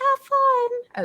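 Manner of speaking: little tiny high sing-song voice. Speaker tells the group about the spider walkie-talkie messages in a little tiny voice. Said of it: "little tiny voices like this".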